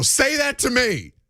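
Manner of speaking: put-on shouting sports-radio voice. Calling out for Chris Russo, then doing his line: Chris Russo impression. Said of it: "where is Chris Russo?".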